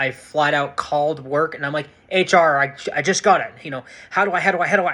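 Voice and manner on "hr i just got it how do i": mock-excited, higher and slower. Retelling calling hr right after getting medical clearance, imitating own excited voice. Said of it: "HR could hear the excitement about my voice".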